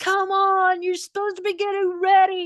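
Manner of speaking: very high, really mad yelling, acted out. Rushing the kids to a homeschool group, retelling her yelling at the kids. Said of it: "yelling at the kids".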